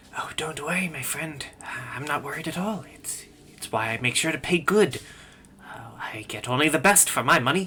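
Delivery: hushed, secretive whisper. Voicing a merchant answering a player's character in a role-play, whispering back. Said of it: "He whispers back".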